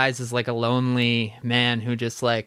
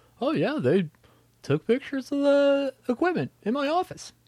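very high, pitched-up voice; 13 semitones higher than usual. Retelling what a friend said about the office photos: impression of Carl. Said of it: "That was my impression of Carl".

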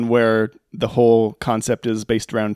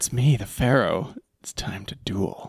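put-on seductive cartoon voice, much lower, quieter; 3 semitones lower, 6 dB quieter than usual. Discussing Yugi's voice with a co-host, doing a mock-seductive Yugi voice. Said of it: "a very seductive voice".

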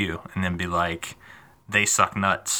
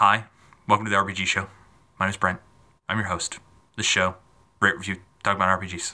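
mock listless, lifeless, bored host-style delivery. Imitating own early show intro: imitating own unenthused intro. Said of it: "it just started the show so unenthused".

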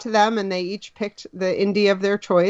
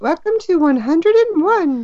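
put-on British accent, much higher pitch; 9 semitones higher, 4 dB louder than usual. A host welcoming listeners to episode 101, in a British accent. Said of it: "do some British accent".

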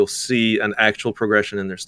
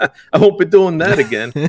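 put-on loud, slow, deliberate, drawn-out Italian accent; 8 semitones higher, 5 dB louder than usual. Quoting own past reaction to costly company mistakes: Italian accent. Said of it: "In the Italian accent".

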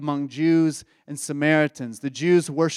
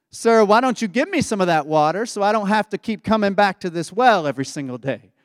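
tongue-in-cheek, needling sarcastic tone; 4 semitones higher than usual. Retelling a woman's reply at the well: imitating a sarcastic tone. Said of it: "maybe in a sarcastic tone".

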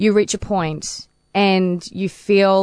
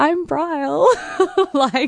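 very high, starstruck, nervous panic. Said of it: "And I'm just like".

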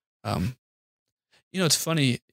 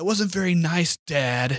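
put-on high-pitched yelling in a child's voice. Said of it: "turns around and yells at me".

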